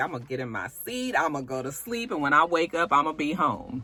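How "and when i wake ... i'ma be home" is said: ordinary talk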